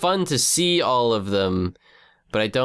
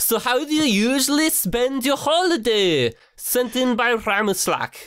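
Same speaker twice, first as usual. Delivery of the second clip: fake Swedish accent, higher pitch. Reading out a question sent in by Ramislak: put-on Swedish accent. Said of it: "I might be able to do Swe-, Swedish".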